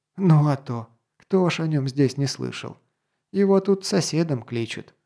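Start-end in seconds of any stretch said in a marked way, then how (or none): none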